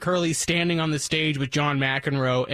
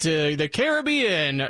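put-on slow, booming aged voice. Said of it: "do that big old voice and say".

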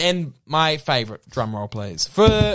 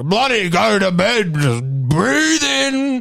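put-on big, booming, drawn-out loud voice; 7 semitones higher, 4 dB louder than usual. Describing a loud meditation podcast host: imitating a loud booming voice. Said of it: "naturally quite a loud, booming voice".

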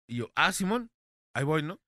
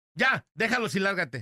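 mock rude, dismissive yell, pitched high; 5 semitones higher than usual. Recounting a delivery, the speaker acts out a producer's line, retelling a rude yell. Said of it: "¿Y quién te gritó".

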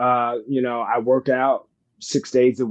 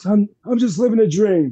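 very high, pitched-way-up put-on voice; 9 semitones higher than usual. Answering a question about wrestler impersonations: John Laurinaitis impression. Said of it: "that's how John Laurinaitis talks".

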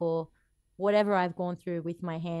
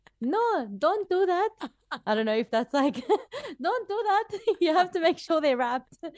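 put-on Arabic-accented speech; 12 semitones higher, 5 dB louder than usual.

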